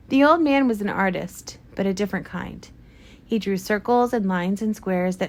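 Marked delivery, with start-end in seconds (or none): none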